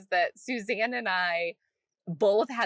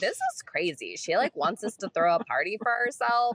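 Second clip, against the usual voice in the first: acted-out mock sarcastic tone. Retelling what they said after a call about a launch party, retelling in sarcastic voice. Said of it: "this is my sarcastic face, like voice".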